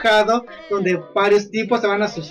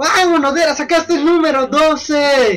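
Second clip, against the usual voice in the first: loud, high, excited shout; 6 semitones higher, 4 dB louder than usual. Retelling someone's reaction when number twelve is drawn, retelling a shout. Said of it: "la Loli empieza a gritar".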